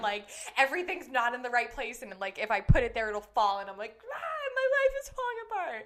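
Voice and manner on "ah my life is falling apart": acted very high-pitched, furious, enraged outburst. Retelling a moment of dropping things in a rush: imitating own enraged outburst. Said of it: "That really fills me with rage".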